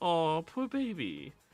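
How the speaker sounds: put-on high-pitched cooing socialite voice. Voicing a passing socialite who pities a player: cooing socialite voice. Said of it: "a random socialite just looks at you and goes".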